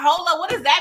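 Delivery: loud shouting. Retelling reacting to a pool scene on screen: retelling screaming at the screen. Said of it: "I was over there screaming at the screen".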